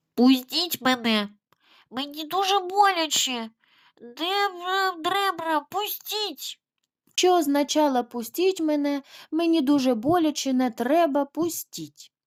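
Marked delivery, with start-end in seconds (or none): 0.2-6.6 nasal mumble, higher and slower. The elephant's child answers the crocodile, mumbling through the nose. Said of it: "воно промимрило крізь ніс ось так".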